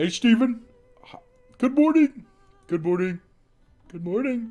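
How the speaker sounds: pitched way up, cartoon style. Guessing aloud at a voice after being asked: Uncle Grandpa voice. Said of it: "what does he sound like?".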